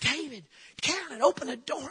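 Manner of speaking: put-on panicked scream, high and frantic. Retelling pounding on the neighbours' door: imitating screaming at a door. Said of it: "I'm screaming".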